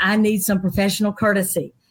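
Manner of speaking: ordinary delivery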